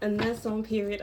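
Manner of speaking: usual speaking voice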